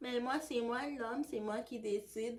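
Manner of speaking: put-on soft, gentle, tranquil, calm little voice. Speaker mimics the little calm voice of the person they're addressing: imitating a soft calm voice. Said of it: "ta petite voix tranquille, tout douce".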